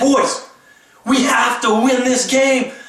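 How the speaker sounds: fired-up, intense, loud, slow, deliberate delivery. Quoting a man's speech to his boys before a game: mock intense, high-energy delivery. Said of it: "He was intense. He was ready. His energy was high. You could hear the tone in his voice".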